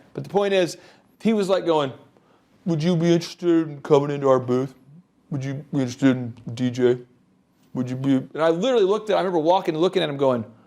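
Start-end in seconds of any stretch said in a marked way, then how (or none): 2.7-8.2 play-acted dejected, mopey sales patter, no spark. Imitating a sad point person inviting people into a booth: imitating a sad pitch. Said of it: "This guy looks sad".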